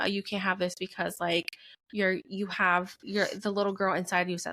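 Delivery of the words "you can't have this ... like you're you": ordinary delivery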